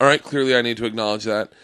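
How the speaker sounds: ordinary talk, nothing marked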